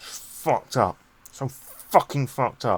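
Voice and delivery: muttering under the breath. Narrating a story, voice a man waiting for a train, muttering to himself. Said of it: "as he's muttering to himself".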